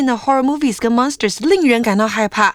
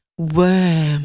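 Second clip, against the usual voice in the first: "worm" stretched long in a British accent; 6 semitones lower than usual. Repeating a vocabulary word, trying worm in a british accent. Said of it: "Let me try that British accent".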